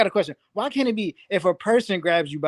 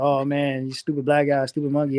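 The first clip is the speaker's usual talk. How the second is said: mock little laugh while talking, lower; 6 semitones lower than usual. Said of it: "use this little, you know what I'm saying, laugh".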